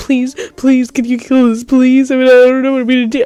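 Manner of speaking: high, frantic, freaking-out panicked voice. Retelling begging a roommate to kill a spider: retelling a panicked plea. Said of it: "I'm freaking the fuck out".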